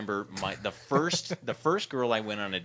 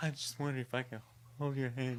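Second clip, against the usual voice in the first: nervous, hushed half-whisper; 3 semitones higher, 7 dB quieter than usual. Retelling asking a date at a movie to hold hands: imitating a nervous half-whisper. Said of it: "I tried to whisper".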